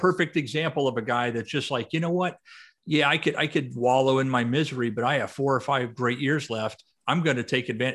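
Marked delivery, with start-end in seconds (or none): none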